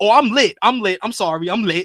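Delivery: very loud, belted wrestling-promo opening yell. Retelling a wrestler's promo: imitating Javon Evans. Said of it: "he starts off the promo, he's like".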